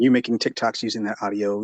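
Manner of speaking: ordinary talk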